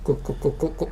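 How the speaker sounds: breathy, whispered spoken gulping and swallowing noises. Pretending to pour water down another speaker's throat: saying gulp as a sound effect. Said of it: "make it sound like I just poured water".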